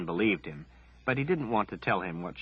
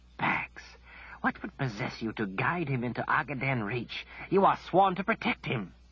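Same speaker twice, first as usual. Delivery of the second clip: harsh, reproachful stage whisper, pitched up; 6 semitones higher than usual. Narrator voicing a man leaning close to Kaelin, speaking in a harsh whisper. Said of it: "directing a harsh whisper to Kaelin".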